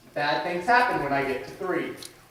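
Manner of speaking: ordinary talk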